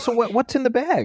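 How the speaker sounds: very high, toying, teasing tone. Retelling a confrontation on the show: imitating Chris Hansen. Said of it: "out walks Chris Hansen from N B C News".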